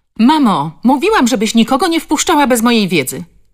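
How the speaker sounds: irritated scolding voice. A woman calls out to her mother in a raised, irritated voice. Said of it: "Dotarł do ich uszu podniesiony, zirytowany głos".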